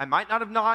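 plain reading voice

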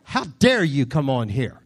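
fake, put-on, indignant angry scolding. Retelling a reaction to a neighbor's leaves in the yard: mock anger. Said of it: "I was angry because".

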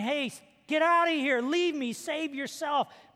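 mock yelling. Retelling a wounded soldier in a foxhole telling his friend to leave: imitating someone yelling. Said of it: "And I start yelling".

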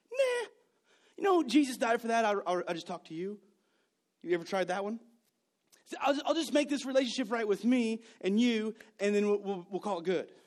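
casual, offhand, dismissive tone. Retelling his own reply to God, imitating own past excuse. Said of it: "And I said".

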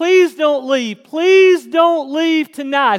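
emphatic pleading, every word stressed. Retelling a youth pastor urging listeners to stay: imitating an insistent plea. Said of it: "He just stressed it".

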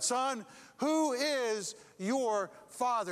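big voice booming, very slow and drawn out. Retelling a church story, voicing whoever grabs his shoulder: big booming voice. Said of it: "a big voice booms out".

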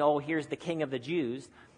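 plain

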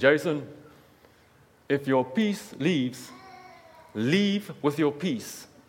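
put-on heavy South African accent, laid on thick. Retelling a mentor's advice: imitating a thick south african accent. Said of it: "very thick South African accent".

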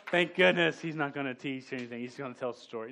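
ordinary talk, nothing marked

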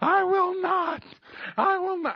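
very high-pitched screaming shriek. Recounting lying on the floor and suddenly screaming, retelling a scream. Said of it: "all of a sudden I start screaming".

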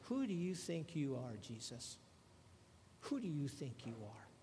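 mock stinky, soft, snotty, arrogant attitude. Acting out how these guys challenged Jesus, mock-arrogant tone. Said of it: "saying it in a very stinky and an arrogant kind of attitude".

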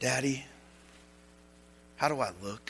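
little, soft, timid, unsure voice. Acting out a girl in her dress asking daddy: imitating a little timid voice. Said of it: "in a little timid voice".

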